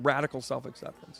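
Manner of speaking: ordinary delivery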